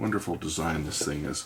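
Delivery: ordinary delivery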